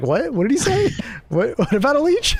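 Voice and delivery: very high, swooping, baffled, bewildered tone. Retelling own confused reaction to a teammate's warning: imitating own confused reaction. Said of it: "I'm like".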